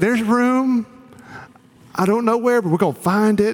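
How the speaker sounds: put-on sweet, high, raspy old lady voice. Imitating what a late woman would say to visiting friends, raspy sweet old-lady voice. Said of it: "raspy old lady sweet voice".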